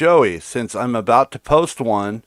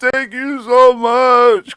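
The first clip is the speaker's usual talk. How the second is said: put-on tearful crying, higher pitch and louder; 13 semitones higher, 5 dB louder than usual.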